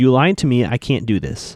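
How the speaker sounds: plain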